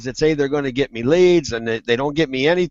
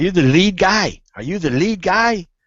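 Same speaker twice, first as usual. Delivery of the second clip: put-on Spanish accent; 3 semitones higher than usual. Retelling a morning phone call from a caller, imitating a Spanish accent. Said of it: "He's got he uh, Spanish accent".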